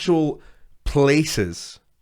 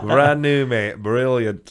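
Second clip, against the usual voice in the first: put-on Barnsley accent. Echoing a voice from the back of the room, in a Barnsley accent. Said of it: "And I was like".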